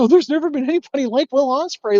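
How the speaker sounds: put-on very high voice, talking through giggles. Retelling a writer praising a wrestler: imitating Dave giggling. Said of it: "sitting there giggling".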